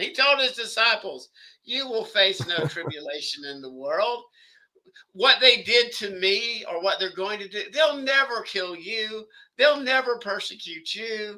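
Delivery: heavy sarcasm. Addressing everybody while discussing tribulation, the speaker talks with heavy sarcasm. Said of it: "I'm being very sarcastic".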